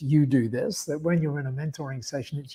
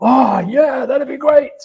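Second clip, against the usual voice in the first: Australian bloke voice, very loud and very high; 10 semitones higher, 10 dB louder than usual. Explaining how an australian bloke reacts to such an offer: australian bloke voice. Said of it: "the Australian bloke would go".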